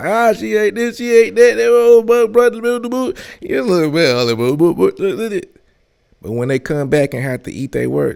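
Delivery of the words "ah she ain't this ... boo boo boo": mocking, loud, higher and louder delivery. Imitating critics who tore someone down: imitating people tearing you up loud. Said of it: "People tear you up loud".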